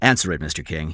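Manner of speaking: plain reading voice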